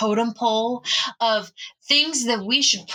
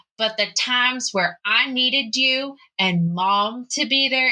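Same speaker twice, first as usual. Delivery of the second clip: ordinary delivery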